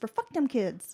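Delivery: put-on whisper. Acting out a mother speaking behind her kids' backs: imitating a whisper. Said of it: "she whisper".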